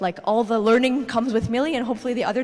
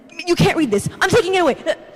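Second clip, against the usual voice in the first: play-acted, high, frantic, panicky freak-out; 7 semitones higher, 6 dB louder than usual. Retelling a father taking a book away: imitating a panicked father. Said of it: "he freaks out".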